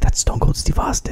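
secret, hushed whisper under the breath. Retelling how a buddy whispered about a bald guy nearby, imitating him whispering. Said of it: "he's whispering".

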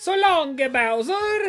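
exaggerated put-on Italian accent. Mimicking a video game character's line, in a fake italian accent. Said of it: "too much of the fake the racist Italian accent".

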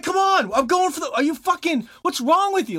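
very high, raging, shrieking screams. Recalling playing Rocket League with a teammate, imitating Shay screaming. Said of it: "he's just screaming all these things".

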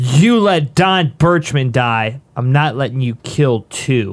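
calling out, projected downward. Playing a character in a game, yelling down at a foe in a tree: yelling down at him. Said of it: "And I yell down at him".

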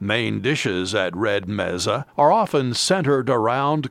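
normal talking voice

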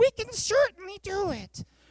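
very high, put-on little-kid play voice. Retelling a Bible story, repeating a line in my son Caleb's pretend voice. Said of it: "in my son Caleb's pretend voice".

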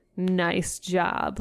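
acted, heavy, super-sarcastic tone. Retelling what a girl said after he yelled down the hallway: retelling a super-sarcastic remark. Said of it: "super sarcastic".

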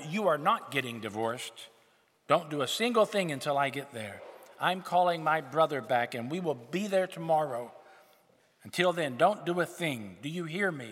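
put-on loud, angry, commanding, furious screaming. Telling a story where a daughter phones her father about his divorce: angry screaming. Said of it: "screams at her father".

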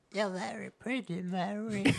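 weird, high, hushed, soft voice. Recounting a movie scene, repeating the Nutcracker's line to Mary in that weird Nutcracker voice. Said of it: "In that weird Nutcracker voice".

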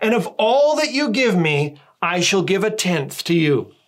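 acted, mock-proud tone. Acting out a figure's vow from verse 21: mock-proud. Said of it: "He says proudly".

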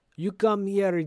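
weird, put-on South African accent. Retelling how a movie worker calls someone over: imitating a weird accent. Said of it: "it's such a weird accent at first".

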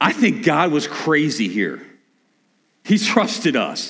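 tongue-in-cheek sarcasm, swooping sing-song. Speaking of God entrusting people with reconciliation: sarcastic. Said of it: "I'm being sarcastic".

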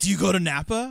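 imitated excited speech.

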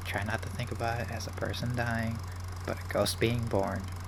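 quiet, hushed murmur under the breath. Recounting watching an upsetting scene on a screen, retelling half-whispering to oneself. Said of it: "I'm just like whispering to myself".

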